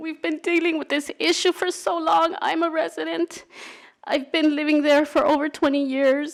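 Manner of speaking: crying, tearful voice. A resident speaking at a public meeting, crying. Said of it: "The reason I'm crying".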